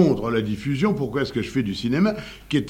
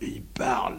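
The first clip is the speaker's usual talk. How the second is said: soft, whispered murmur close to a microphone. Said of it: "en murmurant".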